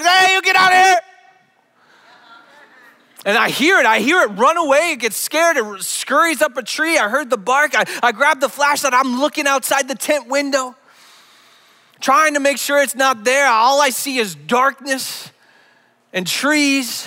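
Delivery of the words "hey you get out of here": loud, high yell at the top of the lungs. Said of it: "I yell at the top of my lungs".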